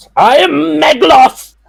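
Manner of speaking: put-on sudden very high, rough, amped-up villain shout. Retelling a line from a story: imitating Meglos shouting. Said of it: "he just shouts".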